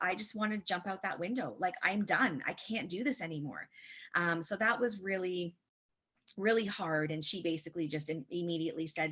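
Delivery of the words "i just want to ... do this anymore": speech while sobbing. Retelling breaking down in tears at physio: retelling own sobbing words. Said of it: "and I just started bawling".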